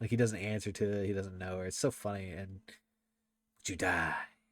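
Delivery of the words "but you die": low, plain, matter-of-fact delivery. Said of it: "he has such a way of delivering certain lines".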